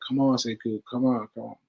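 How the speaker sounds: cajoling, coaxing, urging tone. Retelling how Fee kept getting them out of bed: imitating Fee coaxing. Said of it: "She's like".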